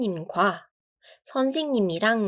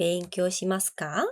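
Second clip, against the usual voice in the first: pitch rising at the end on final ka; 3 semitones lower, 4 dB quieter than usual. Teaching japanese question intonation, rising pitch on final ka. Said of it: "끝에 올려줘야 돼요. 물음표니까".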